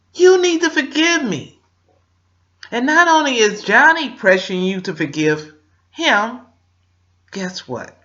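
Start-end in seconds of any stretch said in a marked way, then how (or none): 0.1-1.6 put-on tearful, crying plea, higher and louder. Acting out a sorry partner begging forgiveness: acting out crying and begging. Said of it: "he's crying. He's begging her".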